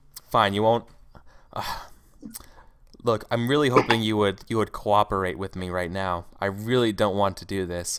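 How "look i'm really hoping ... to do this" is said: dead-level, uncaring, very monotonous flat delivery. A female character urges someone to cooperate with her, very monotonous voice. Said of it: "She says in a very monotonous voice".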